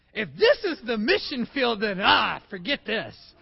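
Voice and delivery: playful joking delivery. Retelling someone's remark after a week of travel delays, retelling a joking remark. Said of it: "Mike jokingly goes".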